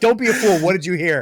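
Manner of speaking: impatient, furious, loud, high-pitched angry scream. Retelling Gandalf's response to Sam's eavesdropping: imitating Gandalf screaming. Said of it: "He like screams at him".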